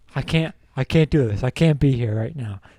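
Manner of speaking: imitated crying, tearful manner of speaking. Retelling what a crying friend said at a strip club: imitating a friend crying. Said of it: "crying slowly as he's like".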